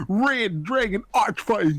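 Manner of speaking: terrible put-on British accent. Imitating how a character used to say a card name: terrible british accent. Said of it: "your British accent is terrible".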